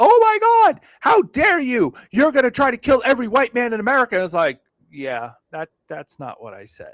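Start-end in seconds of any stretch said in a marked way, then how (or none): 0.0-4.2 shrill, very high, outraged screaming. Retelling what angry critics screamed online: imitating people screaming. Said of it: "have been screaming bloody fucking like".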